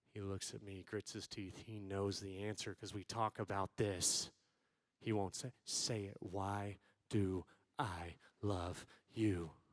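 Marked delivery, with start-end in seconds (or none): 5.6-9.5 mock very slow, hard-toned, unloving insistence. Retelling pressing a son for an answer: retelling own unloving tone. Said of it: "That's not a very loving tone".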